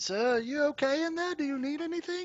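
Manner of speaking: put-on very high young boy voice. Narrating a knock on the door in a scene: young boy voice. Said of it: "and the boy's voice is like".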